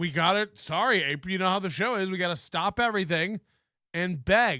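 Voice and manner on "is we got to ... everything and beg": normal talking voice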